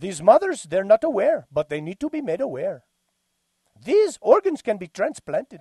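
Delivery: put-on Indian accent. Near the end of the show, the host speaks in a put-on indian accent. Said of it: "That was a pretty good Indian accent".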